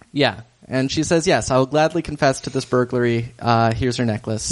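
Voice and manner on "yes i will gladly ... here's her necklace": ordinary talk, nothing marked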